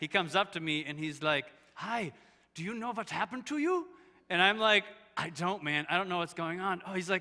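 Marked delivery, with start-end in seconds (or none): 1.7-3.8 put-on butchered Dutch accent, pitched up. Retelling how a dutch man came up to him afterwards, bad dutch accent. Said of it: "I'm going to butcher the Dutch accent".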